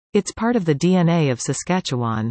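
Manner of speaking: ordinary delivery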